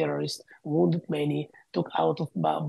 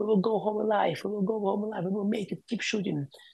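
put-on screaming, much higher; 5 semitones higher than usual. Speaker recounting a bleeding man rallying the others under fire, retelling a scream. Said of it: "he was screaming at them and saying".

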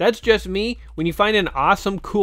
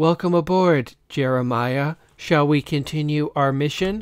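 pleasant female voice, slower; 3 semitones lower than usual. Narrator reading the mech greeting its pilot, pleasant female voice. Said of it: "in a pleasant female voice".

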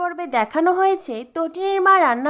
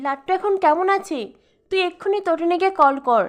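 plain reading voice

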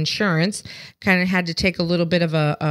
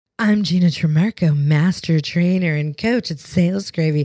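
put-on, sexy, sultry delivery. A podcast host introduces herself at the start of an episode, sexy voice. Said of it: "using my sexy voice".

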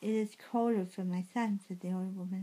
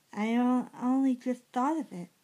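loud, overwrought, hysterical outburst; 4 semitones higher, 5 dB louder than usual. A woman speaks urgently to a man who has just answered her, hysterical. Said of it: "she said hysterically".

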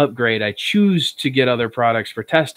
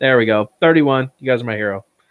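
ordinary delivery

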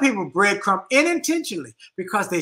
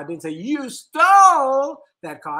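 stole lifted high and loud. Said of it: "each time I put the inflection on a different word".

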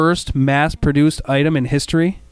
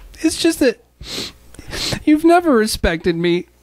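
crying, higher pitch; 7 semitones higher than usual. Hanging from a cliff, answering a companion who just told them to shut up, crying. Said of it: "please don't tell me you're crying".

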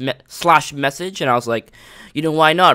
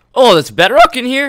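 very high voice break, getting louder; 10 semitones higher, 7 dB louder than usual. Playing a game with a friend, voice cracking mid-sentence. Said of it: "I just had a little voice crack".

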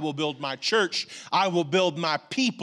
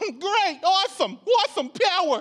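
put-on New York accent, much higher pitch. Retelling how they answered the promise of power, in a put-on new york accent. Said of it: "My voice has just changed".

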